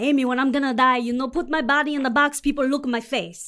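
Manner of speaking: loud put-on broken Portuguese-accented English. Retelling how grandmother asked to be cremated: imitating grandmother's broken Portuguese accent. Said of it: "she loves when I imitate her voice".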